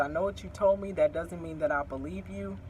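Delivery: ordinary delivery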